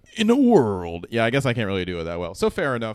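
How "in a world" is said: dramatic movie trailer announcer voice. Someone mentions an audition asking for the movie trailer guy; you do the movie trailer guy voice. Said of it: "can you do the movie trailer guy?".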